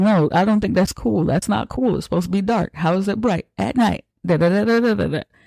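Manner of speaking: indignant, panicked, worked-up freaking-out rant. Retelling a film character's reaction: imitating someone freaking out. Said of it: "he's just freaking out".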